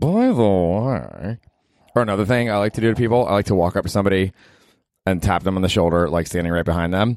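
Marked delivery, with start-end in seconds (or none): 0.0-1.4 secretive, conspiratorial tone, last word drawn out. Showing how to say it to your friends, in a conspiratorial tone. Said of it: "I love to say by the way in a conspiratorial tone".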